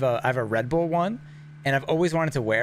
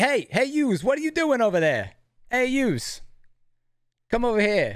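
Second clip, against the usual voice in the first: put-on New Jersey dad accent, higher pitch; 10 semitones higher than usual. Describing vest styles, imitating everyone's dad in New Jersey calling someone over. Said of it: "this is basically like everyone's dad in New Jersey".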